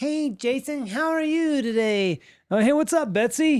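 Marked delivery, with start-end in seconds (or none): 0.0-2.2 talking cow voice. Acting out a cow greeting someone walking by, redone in a Betsy the cow voice. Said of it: "That's not a Betsy voice".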